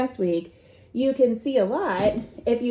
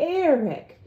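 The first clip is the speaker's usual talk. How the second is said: mock patronizing, condescending, pitched up; 5 semitones higher than usual. Retelling how they used to address an attorney, mock-condescending. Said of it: "I was so condescending to him".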